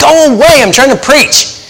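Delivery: fed-up, exasperated yell.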